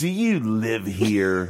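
very slow, drawn-out, sneering delivery. Retelling what a woman in his living room asked: imitating a sneering question. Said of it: "she looks at me with a sneer".

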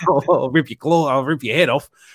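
put-on Australian accent. Imitating the actor playing Wolverine in the first film: Hugh Jackman Australian accent. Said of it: "Hugh Jackman is literally Australian in that movie".

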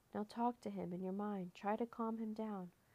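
ordinary delivery

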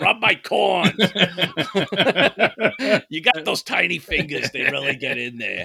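high-pitched, mock old woman voice.

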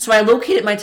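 voice breaking mid-word. Telling another speaker about a stressful online exam: voice cracking. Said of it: "my voice is cracked".

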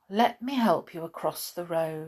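plain reading voice

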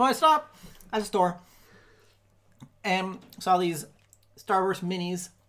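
choppy speech while chewing. Telling a story on a podcast while eating starburst minis: talking while chewing. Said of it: "which is why you're talking so chopped up".

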